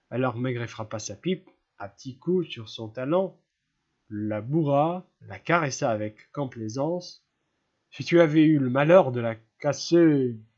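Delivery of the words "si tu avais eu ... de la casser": booming, very loud growled voice. A man who has just packed his pipe growls the line.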